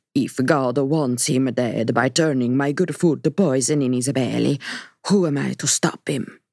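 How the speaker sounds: put-on heavy Sicilian accent, laid on thick. The narrator quotes Aunt Cecily to Kaylee: Aunt Cecily's thick Sicilian accent. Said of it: "adopted her thick Sicilian accent".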